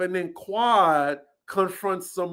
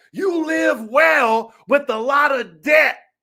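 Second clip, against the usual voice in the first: shouted, yelled delivery, pitched up; 7 semitones higher, 4 dB louder than usual. Retelling a reality show fight, imitating someone yelling back. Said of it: "Simone yells back".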